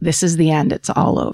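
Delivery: put-on calm voice. Telling the story of a lightning-struck plane, quoting the mother: retelling a calm line. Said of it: "in a calm voice".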